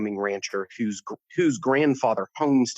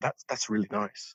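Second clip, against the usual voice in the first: put-on lovely British accent, quieter; 6 dB quieter than usual. A man walking by stops at the speaker's painting, in a lovely British accent. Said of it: "his really really lovely British accent is like".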